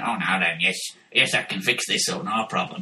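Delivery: very low, deep voice, dropped way down. Imagining writing to Jim'll Fix It and Jim answering: Jimmy Savile impression. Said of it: "and Jim went".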